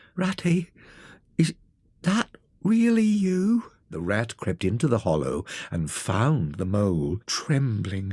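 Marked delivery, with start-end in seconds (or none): 0.2-3.7 weak, frail, feeble voice, pitched up. Reading a story, the mole calls to Ratty from a hole in a tree: feeble voice. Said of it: "came a feeble voice".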